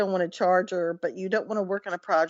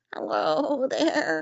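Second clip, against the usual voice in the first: put-on pitched-up elderly old lady voice; 6 semitones higher than usual. Recounting a phone call from an older lady, imitating an older lady's voice. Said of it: "she sounded like this".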